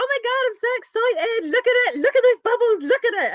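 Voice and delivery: excited high squeal.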